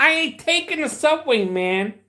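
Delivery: very high-pitched put-on New York Brooklyn accent. Showing how people talk in Brooklyn, New York: Brooklyn accent. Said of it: "you gotta sound like you're from Brooklyn. Because when you're in Brooklyn, this is how they talk".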